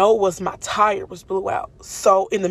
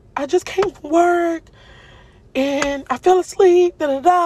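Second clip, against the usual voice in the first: put-on frantic, pitched-up babble, crying without tears; 10 semitones higher, 4 dB louder than usual. Retelling a moment of shock, reenacting freaking out. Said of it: "I'm freaking out".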